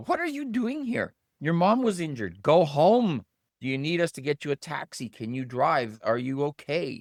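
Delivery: put-on sweet teasing voice. Retelling telling someone whose mom was injured to go home: imitating nicest joking voice. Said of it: "in the nicest joking sort of voice".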